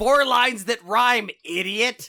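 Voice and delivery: disgruntled, loud, high voice. Voicing an unseen speaker scolding a failed answer, in a very disgruntled voice. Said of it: "you hear a very disgruntled voice".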